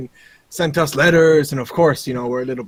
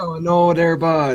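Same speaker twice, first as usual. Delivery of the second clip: fake, put-on Canadian accent. Joking with others, the speaker slips into a put-on canadian accent. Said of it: "Gotta focus on my Canadian accent".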